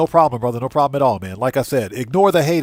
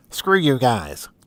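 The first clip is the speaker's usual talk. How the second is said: cartoon character voice. Closing a pep talk, the speaker says the line in Cartman voice. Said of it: "as I say in my Cartman voice".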